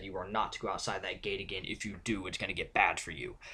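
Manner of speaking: mock severe, very stern, commanding tone. Quoting a worker warning Shanice at the gate, imitating a very stern voice. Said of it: "in this very stern voice said".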